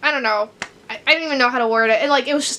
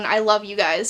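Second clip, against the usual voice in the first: put-on sad whispering, lower; 3 semitones lower than usual. Picturing a character's closing line in the book, imitating a sad whisper. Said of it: "you hear him whispering, like, in a sad tone".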